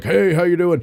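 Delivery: put-on squeaky, high young teenage pipsqueak voice. Imitating a friend's son, now about thirteen: imitating how Gideon talks now. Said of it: "He talks like this".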